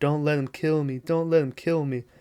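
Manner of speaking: dazed, faint, barely-there, out-of-it half-whisper. Retelling a film scene of the hurt wife in hospital: imitating someone half-whispering.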